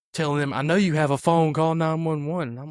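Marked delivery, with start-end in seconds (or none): 0.5-2.4 woman's loud, urgent yelling. Retelling what a woman yelled at the referees: imitating a woman yelling. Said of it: "She starts yelling at the referees".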